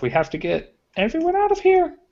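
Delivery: very high, rising gnome lady voice. Game scene, playing a little gnome lady, gradually rising high-pitched voice. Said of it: "her voice just gradually gets more high pitched".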